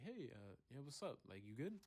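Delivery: fake casual, acting unbothered, forced carefree tone. Retelling answering a teacher while hiding panic: imitating own fake casual tone. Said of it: "trying to act like I didn't have a care".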